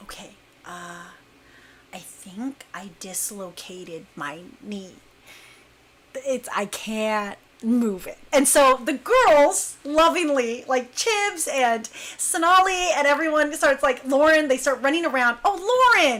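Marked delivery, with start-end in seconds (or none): 0.0-8.2 hushed, slow, low half-whisper. Retelling telling the girls she dislocated her knee, retelling her own half-whisper. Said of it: "I'm like whispering".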